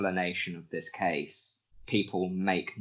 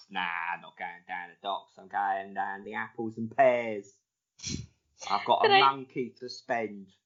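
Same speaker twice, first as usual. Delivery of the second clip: put-on mock Cockney accent; 2 semitones higher than usual. Imitating a man described as having a cockney accent: put-on cockney accent. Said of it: "he did have a Cockney accent".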